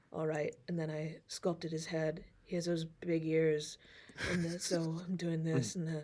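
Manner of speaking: very hushed, deep, low, soft, dry ASMR murmur. Describing a craftsperson's narration of his work, imitating his dry ASMR voice. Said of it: "this very dry A S M R voice where he's like".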